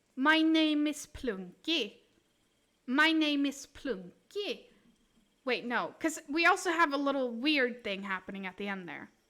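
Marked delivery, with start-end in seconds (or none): 0.2-4.6 slow, put-on, best-attempt Swedish accent. Attempting to imitate how Swedes speak English: put-on Swedish accent. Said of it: "this is the closest I can do".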